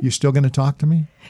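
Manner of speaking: light, playful, joking teasing tone. Teasing the person you're talking to after they admit disagreeing, teasing. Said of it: "I'm just teasing".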